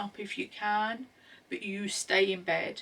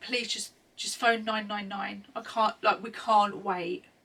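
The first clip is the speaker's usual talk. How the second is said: usual speaking voice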